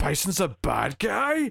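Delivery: stunned, very slow, swooping, drawn-out disbelief. Retelling a movie scene, imitating Zangief: shocked Zangief voice. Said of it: "really shocked".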